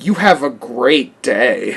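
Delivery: play-acted, very slow, drawn-out sassy delivery. Retelling what a McDonald's worker said when handing over food: imitating a sassy cashier. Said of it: "he's so sassy".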